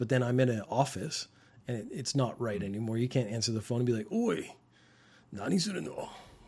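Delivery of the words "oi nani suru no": put-on tough-guy voice, slow and swooping. Explaining why tough-guy talk doesn't fit answering office phones: imitating a tough guy. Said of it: "they talk like a tough guy".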